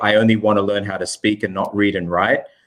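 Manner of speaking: ordinary talk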